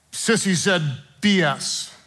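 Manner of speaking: usual speaking voice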